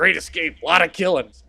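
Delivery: senile, befuddled, lost-sounding delivery. Imagining a scene and acting out a confused line: senile Al Pacino impression. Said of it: "fucking Al Pacino is, like, completely senile".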